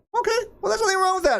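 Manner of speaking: high, squeaky mocking whine.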